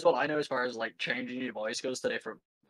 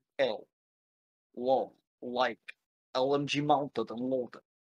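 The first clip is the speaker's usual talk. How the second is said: slow Russian accent, tongue held back on L. Teaching how to keep the tongue back on L sounds, in a Russian accent. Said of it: "If you want to do it in a Russian accent".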